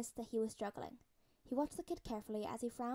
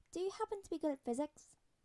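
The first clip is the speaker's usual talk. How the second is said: uneasy, nervous voice, pitched up; 6 semitones higher than usual. Narrator voicing a kid asking an adult for homework help, asking nervously. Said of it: "He asked nervously".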